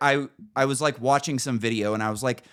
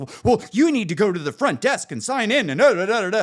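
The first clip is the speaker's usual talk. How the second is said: mock flustered, frantic, high-pitched voice; 7 semitones higher, 4 dB louder than usual. Retelling an argument with a woman who insists on signing in: imitating a frantic woman. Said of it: "she just starts going like frantic".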